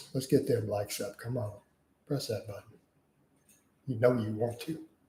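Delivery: put-on seductive, come-hither sexy voice. Asking viewers to press the like button: put-on sexy voice. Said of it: "I'll talk to you in my sexy voice".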